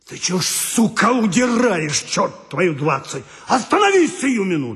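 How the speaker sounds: hoarse-voiced, loud yelling shout. Narrator reports someone running behind him and shouting, in a hoarse shout. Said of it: "кричит осипшим голосом".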